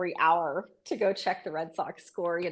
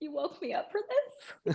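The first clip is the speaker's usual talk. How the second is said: put-on weepy, slow, breathy whispered crying voice; 10 semitones higher, 6 dB quieter than usual. Retelling being woken as a child to watch a loss: imitating own past crying. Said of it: "crying to my mom going".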